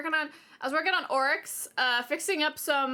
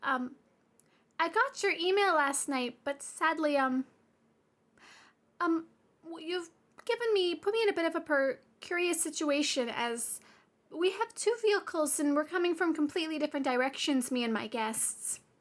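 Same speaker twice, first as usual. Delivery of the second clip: sugary, careful, stumbling, sweetest polite voice, acted out; 3 semitones higher than usual. Retelling a phone call to a manager about a reservation: imitating her own sweetest voice. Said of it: "I put on, like, my sweetest voice".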